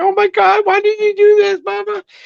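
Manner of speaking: mock very high, loud, tearful crying voice. Retelling how Amy messaged after getting a cameo: imitating Amy crying. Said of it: "She's, like, crying".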